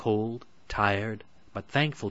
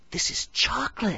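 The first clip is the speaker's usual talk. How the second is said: gasping, pitched much higher; 13 semitones higher, 3 dB louder than usual. Narrating the fairy tale as the children find the cottage, Hansel gasping. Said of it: "gasped Hansel".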